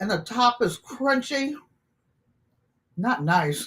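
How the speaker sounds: talking with food in mouth while eating. Tasting food, speaker talks with food in mouth. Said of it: "Try not to talk with food in my mouth".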